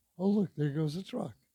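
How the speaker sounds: ordinary talk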